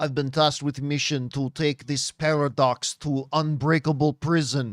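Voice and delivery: low, deep put-on Russian accent. Quoting Yelena's line from the Thunderbolts trailer, Yelena Russian accent. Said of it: "That that is the greatest Russian accent you are ever going to hear".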